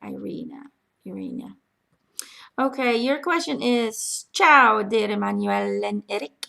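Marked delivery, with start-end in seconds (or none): 4.3-6.5 put-on Italian accent. Reading aloud a question from a viewer in italy: italian accent. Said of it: "Got myself an Italian accent there".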